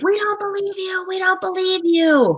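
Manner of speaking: shrieked, very high screaming. Retelling a young woman at a march screaming at an officer: imitating someone screaming. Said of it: "started screaming".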